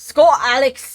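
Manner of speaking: booming, loud, high, badly faked Scottish accent. A streamer reading a chat viewer's name aloud, in a bad Scottish accent. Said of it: "that was a really bad Scottish accent".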